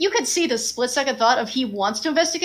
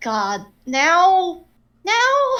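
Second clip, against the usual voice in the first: grumpy, pitched-up grouchy gripe, dragged out; 5 semitones higher, 3 dB louder than usual. Voicing a character disturbed while resting: grumpy. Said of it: "a brief grumpy look of".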